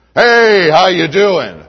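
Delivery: big, loud, booming voice. Showing how an adult speaks to a little child, in a big booming voice. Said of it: "an adult like me with a big booming voice".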